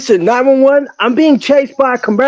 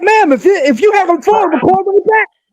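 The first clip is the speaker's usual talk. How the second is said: high-pitched put-on screaming yell; 7 semitones higher than usual. Retelling a call to nine one one, retelling own screaming. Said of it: "you were screaming at her though".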